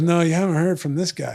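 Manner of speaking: ordinary talk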